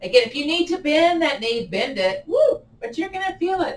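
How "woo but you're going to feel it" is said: woo slipping out, voice going high. Guiding a stretch while holding the pose, voice going high. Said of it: "My voice got high".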